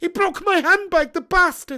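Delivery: very high, loud, shrill Scottish woman's voice. Joking with a mate, launching into a Mrs Doubtfire impression. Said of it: "Missus Doubtfire impression".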